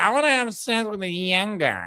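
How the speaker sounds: put-on high, tipsy, drunk voice. Imitating a reality show cast member talking about young guys: imitating a drunk reality star. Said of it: "she's just like".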